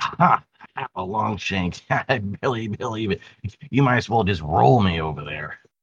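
stumpy little goblin creature voice. Voicing a goblin who taunts a player before being thrown: goblin character voice. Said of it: "he's like".

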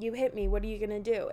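put-on angry man voice. Retelling what the man from the other car said: imitating an angry man.

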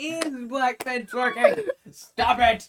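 shrill, very loud, high-pitched full-volume yell. Reacting with friends to a video they are watching, shouting. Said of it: "don't shout that".

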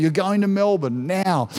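ordinary talk

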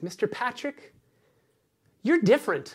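put-on high, sweet, cute toddler voice. Retelling what a two-year-old said while reading a book together, cute little two-year-old voice. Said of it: "in the cutest little two-year-old voice".

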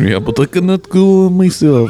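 fake Russian accent. Joking around with friends, playing Dracula in a bad Russian accent. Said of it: "Now I'm Russian".

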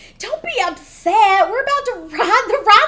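very high, loud, honeyed sweet voice. Retelling what a woman told the speaker at a party, imitating her voice. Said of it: "And this was her voice too".

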